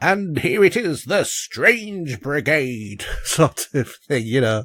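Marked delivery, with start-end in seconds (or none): 0.0-3.0 put-on slow, tremendously British newsreel narrator announcer accent. Describing a video game's newsreel-style intro, in a Strange Brigade narrator voice. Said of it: "there's a narrator in the game who's got a tremendously British accent".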